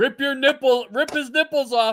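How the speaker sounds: very high, loud yelling. Telling how a woman right in front kept yelling during Craig's match, retelling her yelling. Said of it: "She kept yelling".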